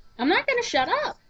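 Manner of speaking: high, loud, defiant yell.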